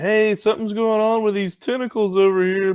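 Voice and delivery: loud, high-pitched yelling voice. A player's character moves ahead and calls back to the rest of the party: yelling to the party. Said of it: "I'm gonna yell back to the rest of the party".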